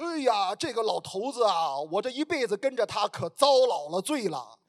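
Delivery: put-on Shandong accent. Quoting an old woman pointing at her husband, in a Shandong accent. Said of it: "这个是山东口音哈".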